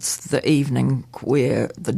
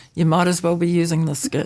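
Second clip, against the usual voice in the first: normal talking voice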